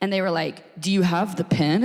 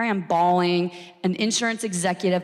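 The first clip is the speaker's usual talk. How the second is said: ordinary talk, nothing marked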